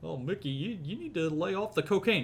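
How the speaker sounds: put-on dopey cartoon dog voice. Speaker acting out an exchange, answering Mickey: Goofy voice.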